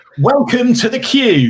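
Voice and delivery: quiz host announcer delivery. Performing a requested line from a viewer's comment: Phil Schofield impression. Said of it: "Can you say, 'Welcome to the Cube'".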